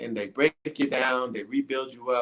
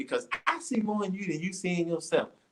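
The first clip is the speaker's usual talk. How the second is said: pitched-up, nagging, lecturing schoolteacher voice; 7 semitones higher, 4 dB quieter than usual. Retelling what Miss Benton said while nagging, imitating Miss Benton's voice. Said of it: "I'm trying to get into her voice".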